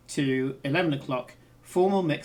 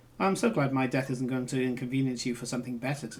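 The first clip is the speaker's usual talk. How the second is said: flat, monotone, bone-dry deadpan delivery; 3 semitones lower than usual. A character answers the person heading out, deadpan. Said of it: "she very deadpan says".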